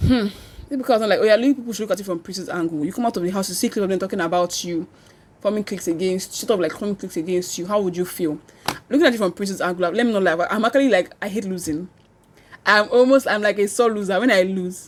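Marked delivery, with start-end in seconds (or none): none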